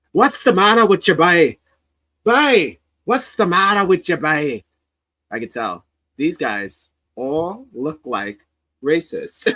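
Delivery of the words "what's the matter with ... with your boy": put-on old-time Irish beat cop accent. Explaining why a cop in the story does an accent: Irish cop accent. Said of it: "all the cops sound like um o- o- O'Leary".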